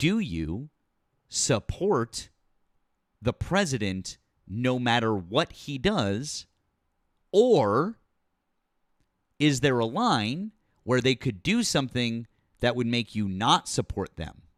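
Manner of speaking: slow, drawn out, long pauses between words. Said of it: "I'll speak slower for you".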